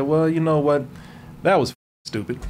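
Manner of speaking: ordinary talk, nothing marked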